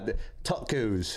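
slow put-on American accent, "tacos" drawled.

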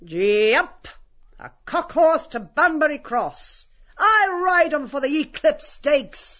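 hard calling voice. Voicing a character who mounts another like a horse, calling in a hard voice. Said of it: "calls in a hard voice".

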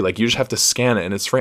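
ordinary talk, nothing marked

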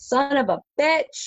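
high-pitched yelp of pain. Describing his elbow hitting the metal, acting out a really loud scream. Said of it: "i'm just gonna scream out really really loudly".

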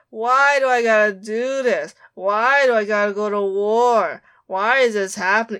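mock whiny complaining voice. Arguing with a co-host about a character, imitating her whining. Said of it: "it's just whining".

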